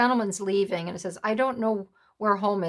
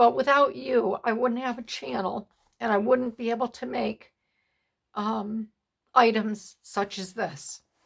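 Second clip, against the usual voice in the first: choked up, struggling to compose oneself; 3 semitones higher than usual. Thanking subscribers for supporting the channel, choked up. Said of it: "I'll pull myself together".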